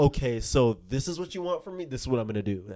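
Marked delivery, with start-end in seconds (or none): none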